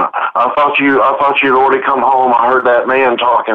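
mock frightened voice on the edge of tears. Retelling the daughter's words on hearing a man in the house: imitating someone scared near tears. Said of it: "almost in tears, scared to death, going".

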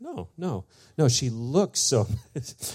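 put-on high, slow, earnest child voice.

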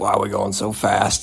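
mock grumbling. Telling a story about a trip with Dad, speaker retells own grumbling. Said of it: "I was kind of grumbling".

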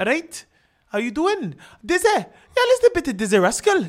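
put-on Welsh accent. Retelling a conversation with some guys, he voices them, imitating a welsh accent. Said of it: "let me get my Welsh settings".

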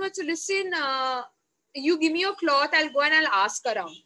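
normal talking voice

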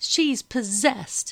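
high-pitched, loud spluttering outburst. The lady of the house answers a question about a girl, sputtering. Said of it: "Madam sputtered".

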